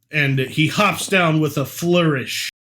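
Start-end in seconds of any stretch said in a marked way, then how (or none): none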